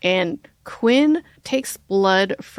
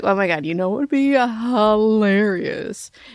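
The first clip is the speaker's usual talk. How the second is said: acted maniacal laughter. Retelling what a character said to Joe, imitating maniacal laughter. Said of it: "He just starts laughing maniacally".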